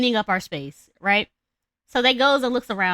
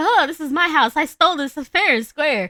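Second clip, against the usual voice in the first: sudden screamed outburst, yelled out; 7 semitones higher, 3 dB louder than usual. Retelling a story, the speaker acts out a woman waking up in the house: retelling a scream. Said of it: "she screams like".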